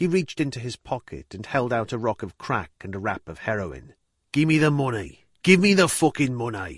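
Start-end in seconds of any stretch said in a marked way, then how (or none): 4.3-6.8 loud, snarling, insistent. Retelling what the man selling drugs snarled at the speaker: retelling a snarl. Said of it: "he snarled".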